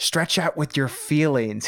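slightly annoyed, put-out delivery. Imitating how Alec Guinness delivers the line: Alec Guinness, a little annoyed. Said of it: "he says it almost like he's a little annoyed".

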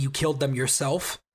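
low whispered voice. Retelling a scene where a character mocks a praying man: imitating someone whispering. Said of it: "she starts just by whispering".

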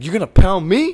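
piercing shriek, very high and very loud. Speaker retells what the director yelled back at Elliot, retelling a yell. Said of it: "what the director yelled at him?".

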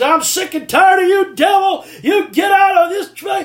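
mock very high yell at top of lungs. Retelling praying alone in church, rebuking the devil: retelling own yell at top of lungs. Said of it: "I'm just yelling at the top of my lungs".

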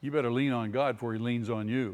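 ordinary talk

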